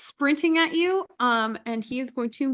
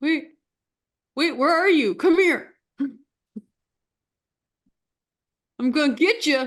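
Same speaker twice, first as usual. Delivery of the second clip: screaming, bellowing monster voice; 3 semitones higher, 4 dB louder than usual. Running the game, voice an unseen monster calling around the hallway: bellowing monster voice. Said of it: "you both just hear like screaming and bellowing".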